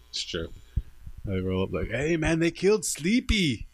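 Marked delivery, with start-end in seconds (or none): 1.9-3.5 slow, drawn-out, fake Mexican accent. Retelling a John Rambo movie scene, in a put-on Mexican accent. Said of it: "that was a good Mexican accent".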